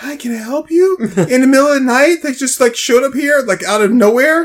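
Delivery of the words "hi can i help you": soft-spoken, gentle, mild-mannered voice. Commenting on a woman greeting would-be robbers, imitating her soft voice. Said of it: "I like how she's so soft".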